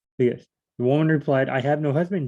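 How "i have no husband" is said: usual speaking voice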